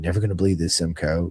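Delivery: whispered words. Telling a race story, quoting a buddy who leaned over to whisper, retelling a whisper. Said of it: "he leans over and whispers in my ear".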